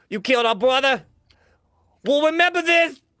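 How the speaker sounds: very high, shrill, loud, vengeful rat-like squeal. Voicing the rat brothers threatening the player who killed their leader: vengeful rat gang voice. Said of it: "they point to you specifically".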